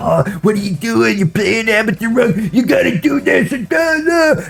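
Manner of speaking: play-acted very high screaming. Retelling how teammates reacted during a match: imitating teammates screaming. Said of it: "they would be screaming at me".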